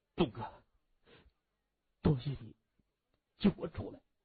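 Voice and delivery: voice quivering on each word. Narrator reads a man who has just collapsed to his knees, trembling voice. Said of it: "颤声说".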